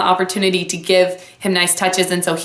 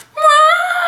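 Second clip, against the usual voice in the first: put-on very high, shrill, angry toddler wail; 5 dB louder than usual. Retelling how a hit little boy called out: imitating an angry child. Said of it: "and is just so mad".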